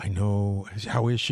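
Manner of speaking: slow, mournful, sorrowful voice, acted out. Retelling a guest asking how she was: imitating Bradley Cooper's sad voice. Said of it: "their sad voice to ask how Robin was".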